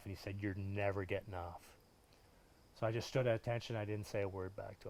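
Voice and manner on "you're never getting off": put-on menacing drill instructor whisper, lower, quieter. Retelling how a drill instructor whispered threats in his ear: imitating Sergeant Smith whispering. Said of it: "whisper in my ear".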